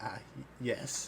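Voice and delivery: very shaky, quavering, trembling voice. Retelling a man's answer to a threatening demand, imitating a very shaky voice. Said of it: "he in a very shaky voice".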